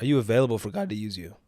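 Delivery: voice breaking. Addressing listeners as fam, voice cracking. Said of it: "Voice crack".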